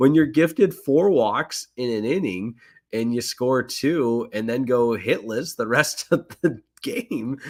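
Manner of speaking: words breaking up with laughs, talking through laughter. Recapping a missed scoring chance in the game, laughing while talking.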